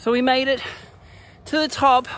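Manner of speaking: breathless, winded, very high-pitched and loud. Having just made it to the top together, out of breath. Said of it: "We're a bit out of breath".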